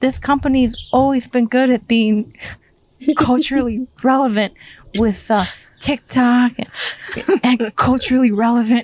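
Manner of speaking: high, flustered, panicky nervous rambling, acted out. Retelling her question to the CEO: imitating panicked nervous speech. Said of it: "the panic hit her".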